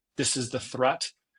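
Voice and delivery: ordinary delivery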